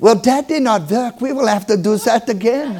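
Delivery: put-on strong, unmistakable, very distinct German accent. Retelling what the woman giving the injection said, in a distinct german accent. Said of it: "with a very distinct German accent".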